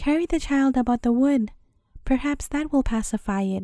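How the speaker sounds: ordinary delivery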